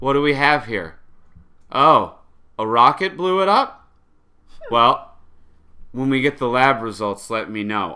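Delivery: zero-urgency delivery. Retelling how she responds after a rocket blew up a building: imitating a bored monotone. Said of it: "Everything was delivered very monotone".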